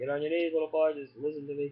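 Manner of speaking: usual speaking voice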